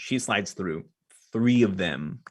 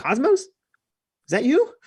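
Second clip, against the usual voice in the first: out of breath, winded, very high-pitched; 7 dB louder than usual. Voicing Ash as she comes through on the other end, winded Ash voice. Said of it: "you hear her voice is kind of she's winded".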